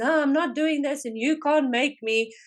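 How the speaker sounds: mock yelling, high, full-throated, top of the lungs. Recounting a lady who refused the new digital system, imitating someone shouting. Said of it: "just shouting at the top of her voice".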